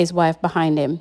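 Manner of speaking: ordinary delivery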